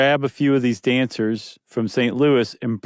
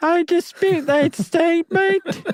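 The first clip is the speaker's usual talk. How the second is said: put-on British accent, pitched way up high. Voicing how the Taylor Girls would answer a claim about the Rockettes; Taylor Girls' British accent. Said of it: "But they would say it with a British accent".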